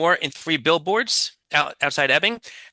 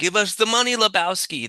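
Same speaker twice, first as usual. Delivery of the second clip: put-on German accent, higher pitch, slower pace; 4 semitones higher than usual. Recalling an actor's Big Lebowski role, doing Peter Stormare's German accent. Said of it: "He was the German".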